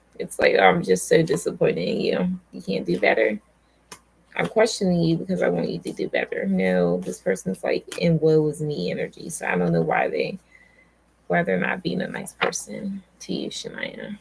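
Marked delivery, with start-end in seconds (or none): none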